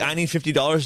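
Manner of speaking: ordinary talk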